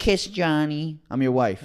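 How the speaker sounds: put-on high, coarse, crude Brooklyn accent. Playing a wife speaking to her husband, in a coarse, dirty Brooklyn accent. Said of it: "coarse, dirty Brooklyn accent".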